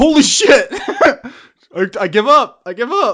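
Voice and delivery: very high, very loud, slow, shrill panicked shout. Voicing a terrified man who drops his beer and surrenders: panicked surrender shout. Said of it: "Drops his half-empty beer bottle and just goes".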